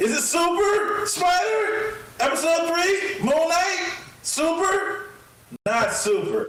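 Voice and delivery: very high, shrill shouting. Asking about the latest superhero episode, yelling. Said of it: "Why are you yelling at me".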